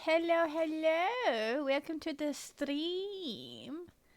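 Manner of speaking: high, slow, weird silly voice.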